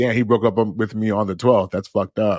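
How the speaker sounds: ordinary talk, nothing marked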